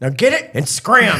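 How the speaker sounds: play-acted high, lost-temper delivery. Retelling a buddy's reaction to a balloon landing on his lawn: imitating Wade losing his temper. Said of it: "went up there and lost his mind".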